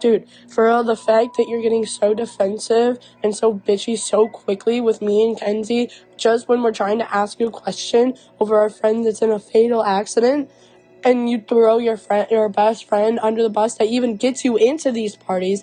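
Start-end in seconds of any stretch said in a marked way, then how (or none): none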